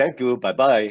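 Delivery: put-on Israeli-accented English. Retelling how a busy executive said goodbye after meetings: Chaim Saban's Israeli accent. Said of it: "he has a Israeli accent, he would go".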